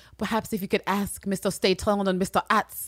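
put-on Creole accent. Retelling a line that a character says about two other characters, imitating a Creole accent. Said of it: "she's got like this fucking Creole accent".

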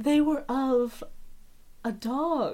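conspiratorial, secretive, confiding tone. Voicing a character who leans in to reveal the ashes: conspiratorial. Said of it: "leans in very conspiratorially and she's like".

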